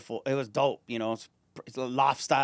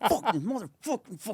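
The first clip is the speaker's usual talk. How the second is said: put-on pissed-off cursing muttered to oneself, pitched up; 10 semitones higher than usual. Retelling walking home late at night, imitating pretending to be pissed off. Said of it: "I would just pretend I was pissed off about something".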